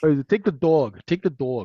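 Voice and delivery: put-on New York accent. Retelling a scene where someone is sent to sell a motorcycle, thick New York accent. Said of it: "in the thick the thick New York accent".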